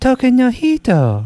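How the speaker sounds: very high-pitched female voice. Speaker recalls copying a woman's phrase, imitating her high voice. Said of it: "I don't have a very like high pitched voice. So I would try to mimic her".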